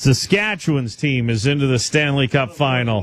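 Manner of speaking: tongue-in-cheek, sarcastic delivery. Announcing a hockey result after warning it is meant sarcastically: sarcastic. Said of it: "I am going to say this with sarcasm".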